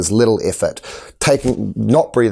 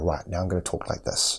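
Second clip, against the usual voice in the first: lowered quiet voice, lower and quieter; 3 semitones lower, 12 dB quieter than usual. Showing how to address a calmed group: voice brought down low. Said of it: "then I can bring my voice down".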